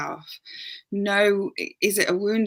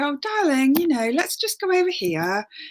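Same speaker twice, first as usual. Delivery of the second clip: higher, calm, loving, soothing voice. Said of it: "speak in that calm, loving voice".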